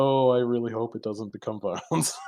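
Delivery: trembling, jittery, shaky, nervous voice. Recounting a game scene, the speaker voices an invisible figure with a shaky voice. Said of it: "He says with like a shaky ass voice".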